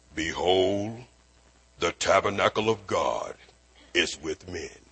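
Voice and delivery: low, proclaiming epic-movie voice. Reading a Bible verse aloud to listeners: Moses voice from Ten Commandments. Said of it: "That's my Moses voice from the Ten Commandments movie".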